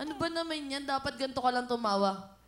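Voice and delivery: ordinary talk, nothing marked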